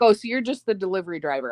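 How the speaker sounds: ordinary talk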